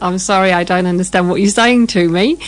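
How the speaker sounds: ordinary delivery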